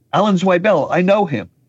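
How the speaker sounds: put-on, high yelled call-out. Retelling yelling out at the written-by credits on screen: retelling own yell. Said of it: "I yelled out".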